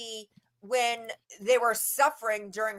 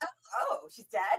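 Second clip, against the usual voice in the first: put-on giddy voice, higher and quieter; 5 semitones higher, 7 dB quieter than usual. Mocking how someone reacted to Dee Dee's death: imitating Christy sounding giddy. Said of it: "You sound downright giddy".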